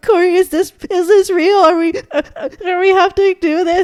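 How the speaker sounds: very high, loud, sobbing, crying through the words. Retelling asking her coworker whether the alarm was real, re-enacting her own sobbing. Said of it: "I was sobbing. I was like".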